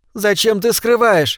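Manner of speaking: high, imploring, begging, pleading voice. From her bunk in the dark, Ballard speaks to Clarke, pleading. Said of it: "умоляюще говорит она".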